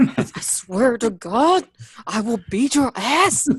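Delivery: put-on hushed yelling voice, quiet. Retelling how Cisco scolds someone at Kroger without yelling aloud, imitating Cisco's hushed angry yell. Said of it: "That's the Cisco voice".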